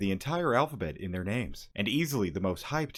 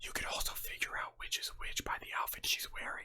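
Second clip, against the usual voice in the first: hushed, breathy, barely voiced whisper; 11 dB quieter than usual. Creator explaining a game character's two phases, whispering. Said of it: "I don't know why I'm whispering".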